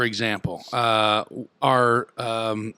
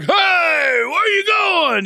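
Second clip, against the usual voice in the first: mock loud drawn-out yell, voice very high-pitched; 5 dB louder than usual. Retelling someone calling out from a porch as he drove past: imitating someone yelling. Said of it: "he yelled at me like".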